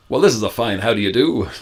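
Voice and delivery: put-on generic American accent, no regional features. Demonstrating an american accent from no particular state: placeless put-on american accent. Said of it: "Like that kind of".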